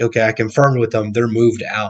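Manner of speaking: ordinary delivery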